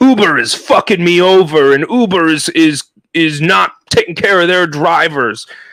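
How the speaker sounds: slow, mock angry, pissed-off complaining outburst. Retelling what an upset Uber driver said: imitating a pissed-off driver. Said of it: "he was all pissed off and he's like".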